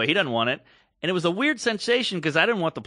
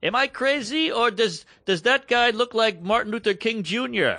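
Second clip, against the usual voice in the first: put-on German accent with raised pitch; 6 semitones higher than usual. Retelling what an old man asked a woman nearby, in a german accent. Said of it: "this is all in a German accent".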